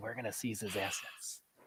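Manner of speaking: raspy, very hushed, barely voiced near-whisper. Mocking how an interviewee now talks, leaning in: raspy almost-whisper Joe Biden voice. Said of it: "she needs to do the creepy Joe Biden voice".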